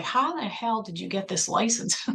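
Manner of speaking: stunned, alarmed, freaked-out voice. Retelling how a mom reacted to seeing a license: imitating freaked-out mom. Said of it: "freaked out 'cause she's like".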